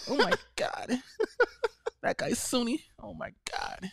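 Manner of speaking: slow, drawn-out, hushed, breathy whisper. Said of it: "Like that".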